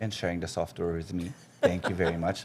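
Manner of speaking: pointed, dry, ironic sarcastic tone. Jokingly thanking a colleague who kept software for a year: mock sarcastic thanks. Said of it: "That's me being sarcastic".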